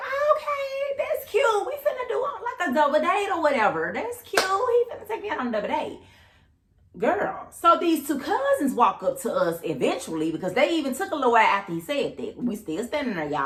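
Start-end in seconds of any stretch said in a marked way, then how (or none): 0.0-6.0 high, cute, fake-cheery chirp. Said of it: "And I'm like".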